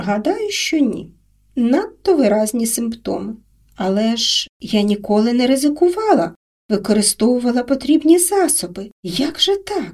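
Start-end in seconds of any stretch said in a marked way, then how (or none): none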